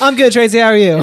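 very loud, high-pitched, chummy, friendly tone. Retelling how Ethan greets Tracy at the counter: imitating Ethan. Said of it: "That's exactly Ethan".

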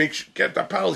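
mock yelling. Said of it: "He's yelling at everybody".

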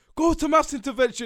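very loud, high, shrill bellowed teacher-style shout. Retelling how the teacher shouted at a friend: imitating a teacher shouting. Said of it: "Benson shouts at him".

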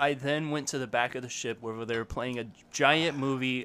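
ordinary talk

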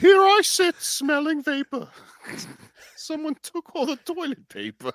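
very high, swooping storybook cartoon honey-bear voice. Performing a rhyme for the record, in a Winnie the Pooh voice. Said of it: "That's my Winnie the Pooh".

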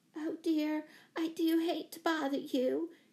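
high, gasped, gasping out the words. A woman flies into the room and speaks to those inside: gasped out. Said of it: "she gasped, wringing her hands".

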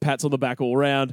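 plain

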